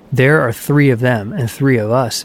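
ordinary delivery

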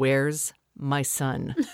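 put-on low-key, low, menacing, aggressive voice. Speaker retelling a dad across the street asking for his son, imitating a low aggressive voice. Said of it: "kind of lowly but with aggression".

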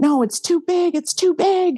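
put-on very high, rising, terrified childlike scream. Retelling being pushed onto a wave as a toddler: imitating a child screaming in fear. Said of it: "I just remember screaming".

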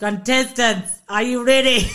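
put-on awful Scottish accent. Recalling Saturday-night Gladiators, quoting John Anderson in an awful Scottish accent. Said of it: "that's an awful Scottish accent".

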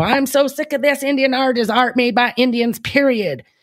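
put-on Oklahoma accent. Quoting a woman fed up with critics, in a heavy Oklahoma accent. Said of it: "she had this real heavy Oklahoma accent".

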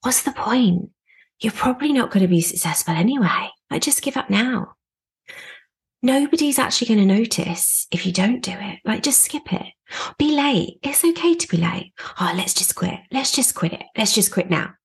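inner-voice whisper. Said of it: "it will whisper things like".

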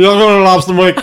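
put-on mumbling in a thick New England accent. Retelling what a man mumbled to her and Steph: heavy Maine accent, mumbled. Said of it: "the heaviest, like, Maine accent".

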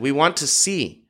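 plain reading voice

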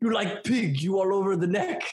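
bad put-on Russian accent, stern tone. Retelling what a stern Russian violin teacher said: bad Russian accent.

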